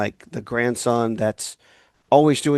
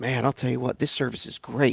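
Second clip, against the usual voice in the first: put-on thrilled, worked-up, eager excited gushing; 6 dB quieter than usual. Retelling a stepdad's call about his new computer, imitating excited stepdad. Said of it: "He was all excited about it".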